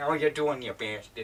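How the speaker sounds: loud, put-on animated cartoon character voice. Trying out voice impressions on request, the speaker starts with a Peter Griffin impression. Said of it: "I'll just start out with Peter Griffin".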